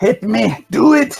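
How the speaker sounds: put-on, hard-to-place Scottish-Austrian accent. Taunting an enemy to hit them: unplaced put-on accent. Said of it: "I don't know what accent I just".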